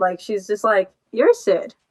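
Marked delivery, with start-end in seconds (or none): 1.1-1.6 put-on innocent, guileless little-kid voice. Retelling how a character names someone: imitating an innocent child. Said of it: "like an innocent child".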